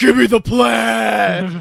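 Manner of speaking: loud, slow, rough voice, "plaid" drawn out. Retelling a shopping trip, imitating someone doing the Braun Strowman voice. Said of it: "doing the Braun Strowman voice".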